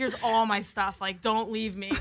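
plain

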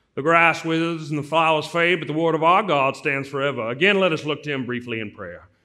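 loud southern preacher-style drawl. Retelling a preacher's sermon words, imitating a southern drawl. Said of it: "He had this incredible drawl, southern drawl".

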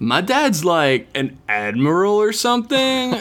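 bored, high-pitched surfer-dude voice. Answering the other speaker's question in the letter writer's surfer voice. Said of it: "Tyler does have an answer for you".

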